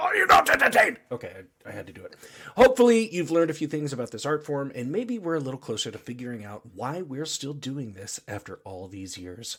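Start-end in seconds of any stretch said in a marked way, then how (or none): 0.0-1.0 belted out, high and loud. Marking the podcast's one-year anniversary, the host does a Russell Crowe impression. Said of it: "doing my best Russell Crowe impression".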